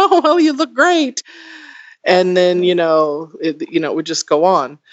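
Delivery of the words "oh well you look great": very high, put-on nervous, awkward chuckling. Retelling how a speaker reacted to their comment, imitating a nervous chuckle. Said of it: "kind of chuckle nervously and say".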